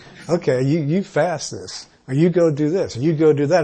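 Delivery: ordinary talk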